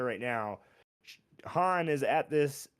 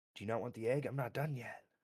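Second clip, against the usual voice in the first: barely audible, very quiet and hushed; 2 semitones lower, 9 dB quieter than usual. Voicing a character who is cutting out an egg: said very quietly. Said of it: "She says it very quietly".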